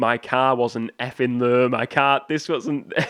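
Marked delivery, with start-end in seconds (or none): none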